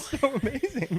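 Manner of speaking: very high, tearful, crying through the words. Answering someone who asks why he's crying, crying. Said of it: "You're actually crying".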